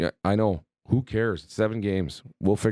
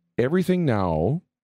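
ordinary talk, nothing marked

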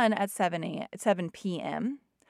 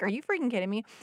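acted-out exasperated, angry outburst. Retelling own reply to a screaming child: imitating own exasperated outburst. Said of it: "trying to rise with him".

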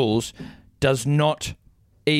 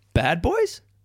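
put-on rising upward pitch inflection on "boys"; 6 semitones higher than usual. Saying a phrase so it sounds like a question: rising pitch on 'boys'. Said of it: "The upward inflection implies... a question".

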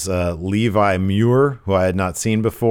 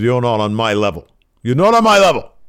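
bad put-on British accent; 4 semitones higher, 5 dB louder than usual. Retelling what Gradwell said to Trent Seven, in a bad British accent Gradwell voice. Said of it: "my Gradwell voice".

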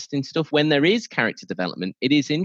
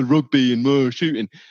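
blokey, laddish bloke voice; 4 dB louder than usual. Doubting that a certain film audience exists, doing an impression of a beer-drinking lad. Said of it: "that's my best impression".

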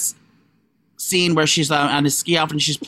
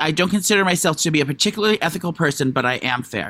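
ordinary talk

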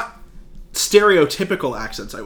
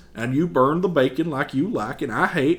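put-on Southern accent, quieter; 2 semitones lower, 5 dB quieter than usual. Quoting a favorite movie line: imitating Adam Driver's Southern accent. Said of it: "The way Adam Driver says".

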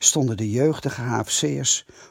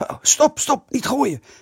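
very high, startled, frightened shout; 12 semitones higher, 3 dB louder than usual. As the door opens on the boys ready to throw, he shouts in fright. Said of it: "riep hij verschrikt".

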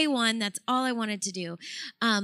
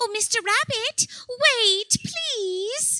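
very high, slow animated-film character voice; 12 semitones higher, 3 dB louder than usual. Showing on request how they voiced Disney characters: Disney character voice. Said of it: "putting voices to these characters".

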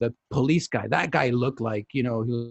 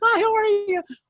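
very high, louder put-on pop singer voice. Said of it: "It gets like [name]".

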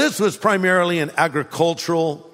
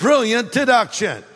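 sarcastic, pitched-up, falsely admiring tone; 5 semitones higher than usual. Reacting to an argument just quoted: sarcastic. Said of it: "I'm being sarcastic".

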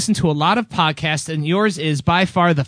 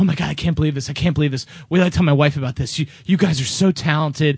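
put-on nervous older man voice, lower pitch; 2 semitones lower than usual. Telling a story about a nervous older man: imitating a nervous older man. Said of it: "he's real nervous".

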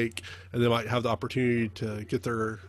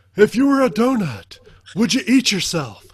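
put-on voice, very loud, high, shrill, booming, swooping; 10 semitones higher, 12 dB louder than usual. A question for a friend named Adrian, in Harry Caray voice. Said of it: "in my best Harry Carey voice".

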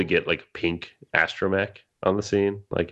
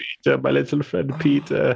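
line read in a Baltic accent; 7 semitones higher than usual. Showing how a name was read in their head: Baltic accent. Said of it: "I did some Baltic accent every time I read".

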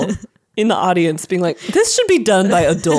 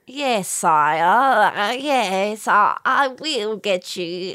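put-on Cockney-accented bat character voice; 3 dB quieter than usual.

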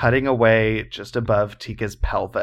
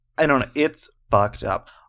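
normal talking voice

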